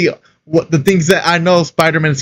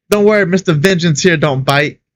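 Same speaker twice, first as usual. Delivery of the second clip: ordinary talk, nothing marked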